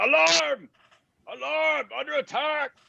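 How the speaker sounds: high, raspy, rough orc yelling. Narrating a game, the speaker voices an orc: shouting orc voice. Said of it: "the orc shouts out".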